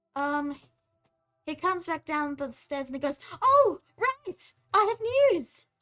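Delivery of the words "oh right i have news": very high, very loud, eager, excited outburst. Voicing a character who comes back down the stairs with news: excited. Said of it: "You sound excited".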